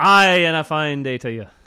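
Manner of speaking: attempted Scottish accent. Greeted by the host, the co-host answers in an attempted scottish accent. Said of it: "That's my best Scottish".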